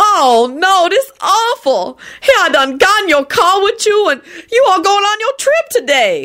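stretched-out, panicked shriek. Narrator reading a character's line in a story; panicked shriek. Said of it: "Lucretia shrieked with a panicked expression".

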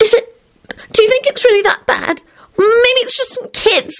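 very high-pitched, terrified stammering. Narrator reading a story voices Solange answering Quentin: terrified stammer. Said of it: "stammered in a terrified voice".

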